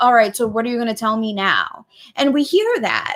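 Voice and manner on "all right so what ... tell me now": put-on aggravated, exasperated tone. Describing customer service calls, acting out a caller: imitating an aggravated caller. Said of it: "call in with the aggravation of like".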